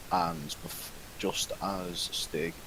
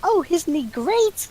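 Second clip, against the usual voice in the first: giggly, put-on character voice; 14 dB louder than usual. Narrating a tabletop game, voicing Oriella about Val: Oriella giggling. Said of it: "Oriella just giggles and says".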